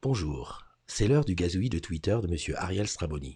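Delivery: very low, close-mic radio-announcer voice. Moving close to the mic to introduce the Twitter segment: France Inter radio voice. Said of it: "je me rapproche du micro pour faire un petit peu France Inter Paris".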